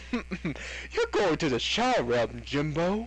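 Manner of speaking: grand, dramatic, theatrical put-on stage voice. Banning a user from chat, the speaker redoes the line: dramatic put-on voice. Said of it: "I didn't do the voice right".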